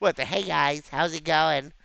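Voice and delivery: very loud, put-on nerdy gamer voice. A gamer shows off the voice every gamer has, in a nerd voice. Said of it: "my nerd voice".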